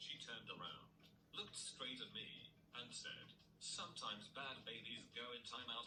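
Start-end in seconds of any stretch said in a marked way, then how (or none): none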